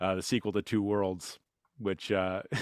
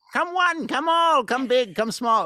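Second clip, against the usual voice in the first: very high, loud hawker's cry, barker style; 10 dB louder than usual. Retelling a video game voice selling in the square: imitating a yelling market crier. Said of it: "he's just yelling constantly in the background".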